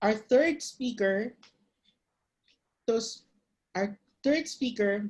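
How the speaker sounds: stuttering, tripping over words with stumbling restarts. An emcee introduces the third speaker at a Toastmasters contest, stuttering. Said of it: "I'm stuttering".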